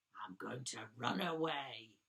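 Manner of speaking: very low, deep tiger-like growl. The tiger Chester, face down in a sticky bun, makes his big decision: growling. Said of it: "he growled".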